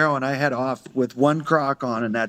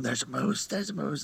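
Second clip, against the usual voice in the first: barely audible, very quiet, hushed half-whisper; 10 dB quieter than usual. Retelling a moose hunt, the speaker re-enacts half-whispering to his companion. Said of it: "I'm whispering to him".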